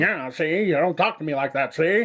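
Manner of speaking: put-on gruff 1930s gangster tough-guy voice. Like a tough old-time gangster warning someone to watch their tone, gruff, nasal and clipped. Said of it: "I started stretching out the words".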